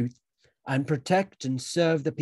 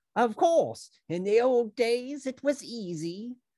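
cheerful, pleased tone with slightly raised pitch; 8 semitones higher than usual. Brother Doorkeeper chimes in after Brother Watchtower, happy. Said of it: "said Brother Doorkeeper happily".

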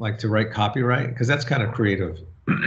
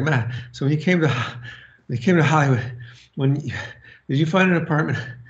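mock out-of-breath, halting, pitched-up panting speech; 5 semitones higher than usual. Retelling a question asked on a steep hiking trail: imitating being out of breath. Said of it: "we're both out of breath".

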